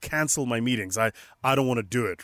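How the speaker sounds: plain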